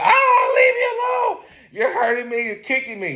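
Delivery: play-acted very high, swooping screaming woman voice. Retelling a fight over a phone, imitating a woman screaming. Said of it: "She's screaming".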